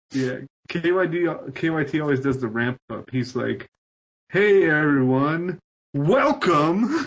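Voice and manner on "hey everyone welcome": put-on booming podcast host voice. Teasing how KYT always ramps up to open the podcast: imitating KYT's booming welcome. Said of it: "He always gives the booming welcome".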